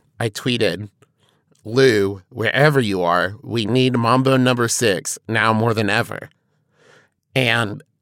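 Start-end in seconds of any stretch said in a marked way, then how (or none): none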